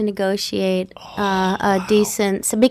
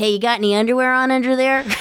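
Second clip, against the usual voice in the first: put-on teasing voice, faster. Channeling a young Harrison Ford ribbing Yoda: young Harrison Ford impression. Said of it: "channel my best Harrison Ford as a kid".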